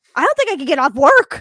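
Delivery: put-on blunt, angry tone. Retelling what someone said in a frank way, mock-angry and blunt. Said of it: "in a frank way, which means it sounded kinda angry. Like".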